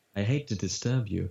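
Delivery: faintly sinister, slightly insidious butler voice. Voice actor demonstrating a game butler role, slightly insidious butler voice. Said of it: "the butler is just my voice, but so slightly insidious".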